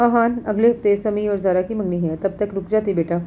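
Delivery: plain reading voice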